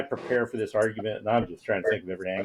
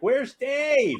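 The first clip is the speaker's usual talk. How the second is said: acted-out piercing, very high, really loud call; 3 dB louder than usual. Retelling how a woman in a courtroom called out during an argument, really loud. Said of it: "in a really loud voice".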